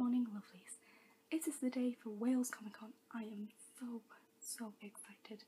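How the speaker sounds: hushed, very soft voice. Morning greeting to viewers while family is still in bed: speaking very quietly. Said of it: "I apologise for me speaking like really quietly".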